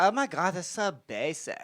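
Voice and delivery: put-on Valley Girl accent blended with British accent. Describing a show about a con artist, imitating her distinctive accent: Anna Delvey accent. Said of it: "she's got the very distinctive accent".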